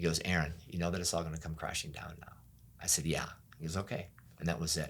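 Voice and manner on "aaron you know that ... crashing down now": extremely gentle, soft voice. Aaron retells the Lord speaking to him, the Lord's gentle voice, retold. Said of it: "in the most gentle voice ever".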